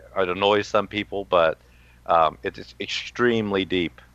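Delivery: ordinary delivery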